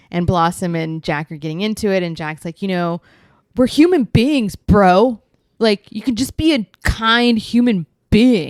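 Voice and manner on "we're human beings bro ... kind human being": laid-back bro talk, slow, raised drawl. Retelling an argument he watched, imitating Jack, bro voice. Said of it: "I don't do a good as good of a bro impression".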